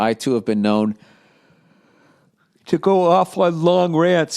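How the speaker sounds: speaking through a yawn. Speaker asking for advice before telling the story, yawning while talking. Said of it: "Sorry, I'm yawning here".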